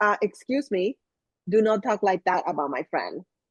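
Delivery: firm, stern, scolding tone. Retelling a habit with friends: retelling a stern reprimand. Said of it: "kind of like a stern face".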